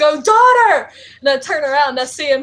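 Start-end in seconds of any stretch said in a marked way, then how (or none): 0.0-0.9 loud, high-pitched call, shouted out. Retelling a cosplay moment across a room: imitating Magneto shouting. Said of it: "have Magneto shout across the room".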